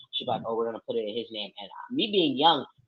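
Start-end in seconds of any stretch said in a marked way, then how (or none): 0.5-1.5 soft, hushed half-whisper aside. Retelling how mom spoke to the stepdad: imitating someone half-whispering. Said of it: "whisper, like, to my stepdad".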